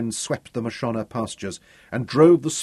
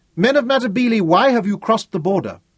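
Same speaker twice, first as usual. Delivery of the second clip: calm, high-pitched, carrying call, unagitated; 9 semitones higher, 6 dB louder than usual. A rider standing in his stirrups hails the Matabele men, calling out, unagitated. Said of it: "showed no agitation as he stood in his stirrups and called".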